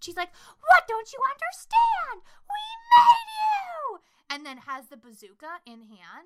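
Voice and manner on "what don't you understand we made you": piercing, very high, very loud shriek. Speaker retells a woman running back out to the people who dragged her inside, imitating someone screaming. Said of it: "she runs out and does it again".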